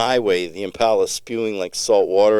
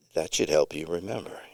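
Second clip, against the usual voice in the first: eerily calm, lower pitch, quieter; 4 semitones lower, 9 dB quieter than usual. A father nods at his child after the skid, in an eerily calm voice. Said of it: "he says in an eerily calm voice".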